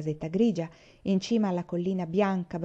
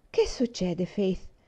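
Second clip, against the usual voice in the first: kindly, sweet and gentle. A woman asks someone who has been crying what is going on, in a sweet voice. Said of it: "chiese Rosemary con voce dolce".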